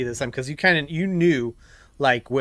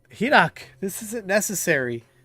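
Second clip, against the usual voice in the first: high, tearful crying speech, talking through tears; 6 semitones higher than usual. A game master voicing an enemy who attacks, then tries to run, crying while talking. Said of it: "It's probably because she's just crying".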